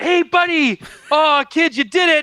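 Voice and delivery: mock proud father voice. Retelling a scene where Din cheers on the kid: imitating Din's proud dad voice. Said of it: "Din gets all like".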